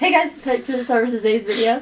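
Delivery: rapid put-on youtuber voice. Speaker showing another how he says his intro, imitating it fast. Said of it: "He says it pretty fast".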